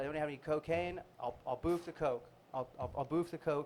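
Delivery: normal talking voice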